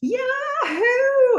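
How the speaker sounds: very high, drawn-out cheer dissolving into laughter. Retelling a tv episode, acting out a woman cheering while cracking up: imitating a laughing cheer. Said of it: "she is cracking up".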